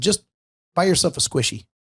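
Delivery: openly rude, dismissive brush-off tone. Retelling what they said to a man at the facility, imitating own rude tone. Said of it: "getting rude with this guy".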